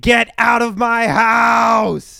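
raspy, loud, high, slow ghost scream. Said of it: "still screaming".

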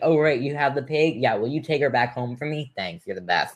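put-on casual, offhand, throwaway tone. Mocking a movie scene where the pig is returned without celebration: imitating Taryn, offhand. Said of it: "And Taryn's like".

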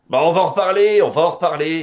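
French spoken with a Belgian accent. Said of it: "dit-il avec un accent belge".

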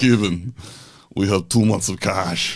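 put-on Russian, Eastern European accented English. Recalling the night his co-founder called about the cash: imitating co-founder's Russian accent. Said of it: "he's got this Russian accent".

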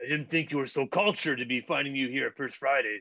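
strutting, swaggering, cocky gym-bro voice. Speaker retells a gym guy approaching her at First Fridays, imitating Chad. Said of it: "There's always that one guy who's always dropping the weights and grunting really loud, and you see him walking right at you, like flexing and making his pecs like jump up and down as he's walking towards you".

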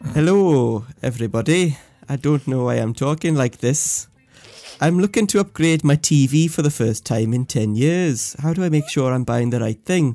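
very loud, put-on Welsh accent. Voicing Richard's question on the show since there is no audio file; playing Richard, Welsh accent. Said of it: "that was a Welsh accent".

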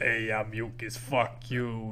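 thick put-on Italian Bronx accent. Describing the little green mucus guy to a friend, in a thick Italian Bronx accent. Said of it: "got like a real thick Italian Bronx accent".

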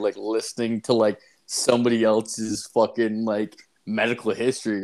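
usual speaking voice

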